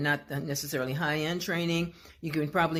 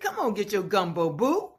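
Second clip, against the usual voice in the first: sing-song Southern New Orleans voiceover accent; 4 semitones higher than usual. Giving a sample of a voiceover a client may want, in a Southern New Orleans accent. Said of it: "a sample of a Southern New Orleans type of voiceover".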